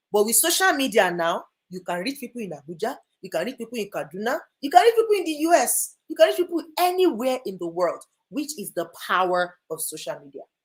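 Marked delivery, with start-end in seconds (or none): 4.6-8.0 high, loud, energetic voice with full energy. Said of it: "energetic [name]".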